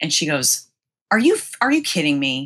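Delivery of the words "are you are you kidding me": really mean, cutting tone. Retelling a woman's answer to a call about a Star Wars wedding: imitating a mean tone. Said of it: "And she said it like real mean".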